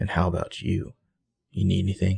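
seductive, sexy voice with rough, creaky edge. Recapping a scene, the speaker voices Caleb's line to Spencer, imitating Caleb's sexy voice. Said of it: "drops in a sexy Caleb voice".

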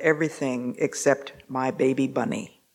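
muttering under breath. Retelling what a son said under his breath: imitating someone muttering under breath. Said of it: "heard one of his sons muttering under his breath".

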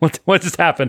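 shaky, high, dazed, bewildered voice like just woken. Retelling how a dog woke from a dream, imitating a shaky dazed dog. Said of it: "all shaky".

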